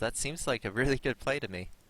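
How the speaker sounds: ironic, tongue-in-cheek, dry sarcastic delivery. Commenting on a game move and calling it a good play: sarcastic. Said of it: "in a sarcastic manner".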